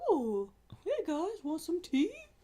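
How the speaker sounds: very high, weird, odd character voice. Playing Godzilla just chilling on a rock, talk to the guys in a weird Godzilla voice. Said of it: "That's just my Godzilla voice".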